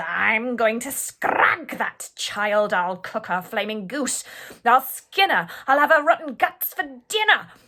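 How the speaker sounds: loud, wild, enraged furious shouting. Reading a rhyming tale aloud, the wicked queen in a rage: furious yelling. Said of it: "She yelled".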